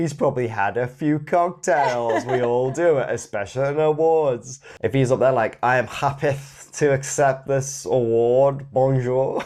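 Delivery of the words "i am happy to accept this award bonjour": put-on slurred, tipsy delivery, words running together. Imitating an award acceptance speech: imitating Jim Carrey slurring. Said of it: "he's slurring his speech".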